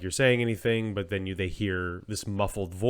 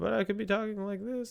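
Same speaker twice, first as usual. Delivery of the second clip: very high, soft, muffled, distant far-off voice; 12 semitones higher, 5 dB quieter than usual. Showing how to make your voice sound far away, muffled far-away voice. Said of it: "like I'm far away".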